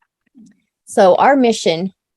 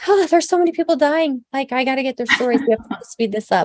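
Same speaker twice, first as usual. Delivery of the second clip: high, fast, rushed panicked blurting. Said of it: "I was panicking going".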